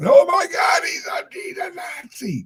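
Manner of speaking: very high, shouted, shocked outcry. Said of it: "Where someone goes".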